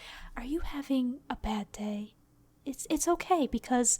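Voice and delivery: quiet, hushed, soft voice in a slow murmur. Recreating a quiet let's play recorded while everyone in the house was in bed: speaking softly. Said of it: "I was just speaking softly".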